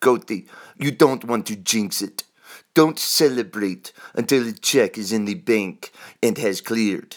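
bad, terrible put-on Hungarian accent. Quoting his first boss on Wall Street, in a terrible Hungarian accent. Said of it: "That is a terrible Hungarian accent I just did".

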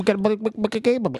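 put-on chicken voice, as if mouth full of marbles. Mocking Keith's line about making a game of it: imitating Keith like a chicken with marbles in mouth. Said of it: "That was Keith if he was a chicken with a mouthful of marbles".

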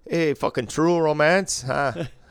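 high, loud, hammed-up bad Irish accent. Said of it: "wanna hear a bad Irish accent".

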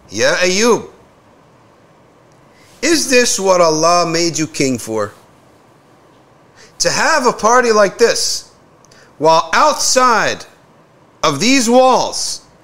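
loud, sharp voice. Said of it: "he raises his voice loudly".

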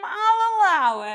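high, booming, very loud and slow, "I'll" stretched out. Doing John Mulaney playing a TV courtroom judge: John Mulaney doing a judge. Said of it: "as John Mulaney says".

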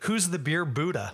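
plain

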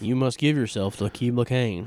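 mock flat monotone, deadpan movie-dialogue cadence. Imitating two characters who only ever talk monotonely, with mock monotone movie dialogue. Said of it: "It's just them talking monotonely".

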